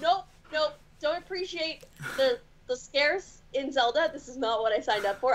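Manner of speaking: usual speaking voice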